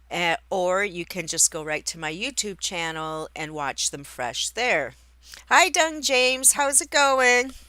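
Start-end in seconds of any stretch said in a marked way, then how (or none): 5.5-7.4 loud, raised, shouted yelling. Greeting a listener over wind and trucks outside, yelling. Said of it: "I don't know why I'm yelling".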